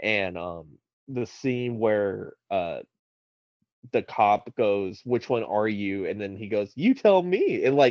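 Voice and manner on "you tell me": mock cheeky, very high and loud. Speaker quotes a film scene where a cop questions him: retelling Heath's cheeky line. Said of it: "it's just the way he says it is so cheeky".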